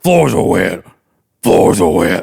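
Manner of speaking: very loud, throaty, guttural barking rasp. Retelling walking in, the speaker quotes a man's remark, in a guttural voice. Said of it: "and gutturally".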